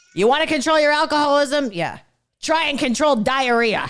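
hard, raspy voice, very high and loud. Retelling how his father made analogies about alcoholism, imitating father's raspy hard voice. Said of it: "in his raspy ass hard voice".

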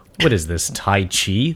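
mock incredulous, disbelieving tone. Retelling how a movie character asks the question: imitating incredulous disbelief. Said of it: "That's how he says it".

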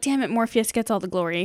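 plain

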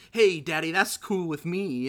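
loud jive beat-poet cadence. Describing a film character's way of talking: jive beat-poetry talk as Dean Andrews. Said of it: "jive beat poetry almost".

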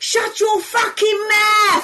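shrill, very high-pitched, loud shout. Retelling shouting down at who you thought was your mate, retelling a shout. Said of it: "So I shouted down to her".

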